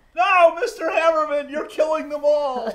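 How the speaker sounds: very high, very loud, shrill full-blast scream. Voicing a sister being grabbed during a fight: screaming in character. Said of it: "she's screaming".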